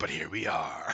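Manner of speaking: low, rough, gravelly half-whisper, matter-of-fact. Pitching a scene, the speaker voices how the character says it: gravelly, half-whispery voice. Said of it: "in his very gravelly, whispery voice".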